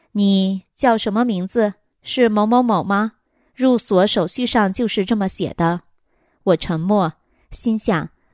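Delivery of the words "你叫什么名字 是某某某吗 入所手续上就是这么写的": usual speaking voice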